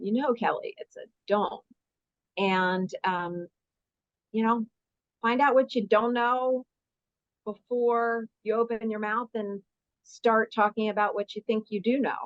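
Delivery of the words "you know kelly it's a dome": mock flat, deadpan delivery. Retelling what he once said to Kelly, retelling a deadpan line. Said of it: "I'll never forget that deadpan voice".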